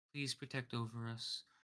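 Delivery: hushed murmuring. Narrator voicing a priest as two characters arrive, quietly murmuring a prayer. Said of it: "you can hear him quietly saying a prayer".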